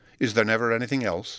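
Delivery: plain reading voice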